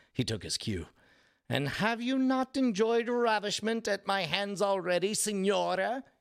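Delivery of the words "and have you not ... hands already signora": stern, high-pitched, chiding and reproachful. Reading a story aloud, a man answering a woman's teasing, admonishing. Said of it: "He admonished".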